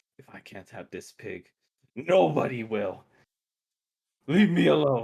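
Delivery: loud hag voice forced through clenched teeth. Voicing a hag who grits her teeth at intruders: through gritted teeth as the hag. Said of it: "She grits her teeth at them and goes like".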